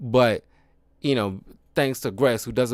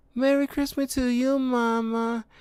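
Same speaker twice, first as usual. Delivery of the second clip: put-on innocent childlike voice, much higher; 13 semitones higher than usual. Speaker recalls a little kid actor's line, innocent little kid voice. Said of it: "just the innocence in the voice".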